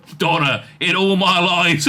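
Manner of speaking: ordinary delivery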